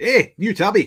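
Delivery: imitated Scottish accent. Joking that a name sounds like a Scottish person asking about a cat: Scottish accent. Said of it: "like a Scottish person asking about a cat".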